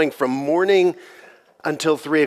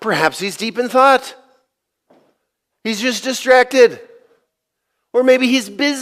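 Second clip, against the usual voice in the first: high, scornful, jeering, mocking tone; 9 semitones higher, 3 dB louder than usual. Retelling how a man taunted worshippers of Baal, in a mocking taunt. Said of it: "So he started taunting them".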